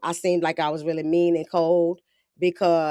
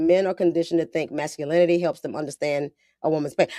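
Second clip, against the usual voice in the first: usual speaking voice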